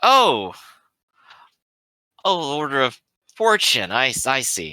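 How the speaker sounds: insinuating, knowing, slow and drawn out with swooping pitch. A character hears the stranger's order named, knowing tone. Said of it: "that's his tone of voice".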